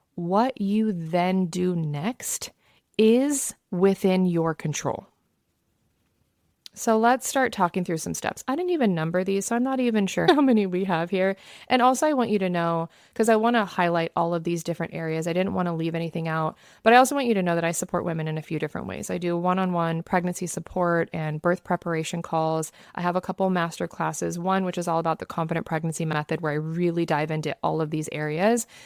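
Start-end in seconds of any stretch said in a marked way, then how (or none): 0.1-5.0 very slow, deliberate delivery on every word. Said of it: "I'm gonna say this slowly".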